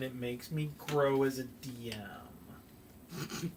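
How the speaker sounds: slow, grumpy, grumbling voice. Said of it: "in that grumpy voice".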